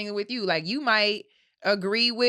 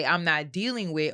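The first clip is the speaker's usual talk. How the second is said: ordinary talk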